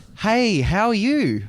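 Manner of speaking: weird, high, loud, overly eager and enthused. Answering a greeting by name, replying in a weird overly enthused voice. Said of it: "That's a that's a weird voice you just had then".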